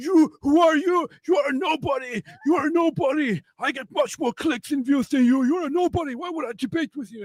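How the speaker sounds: play-acted, shrill, very high, contemptuous, arrogant angry shout. Retelling how he started shouting at me until I laughed, imitating a man shouting angrily. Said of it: "he starts shouting at me like".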